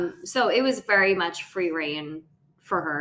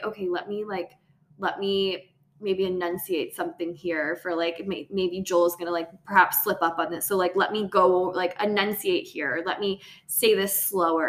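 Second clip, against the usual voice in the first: normal talking voice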